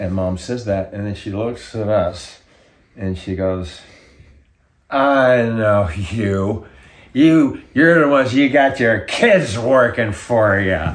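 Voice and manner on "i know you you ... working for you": put-on loud, slow, accusing drunk woman's voice. Retelling what a drunk lady in the next booth said: imitating a drunk woman. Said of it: "she's drunk off her ass".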